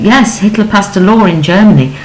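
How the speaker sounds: plain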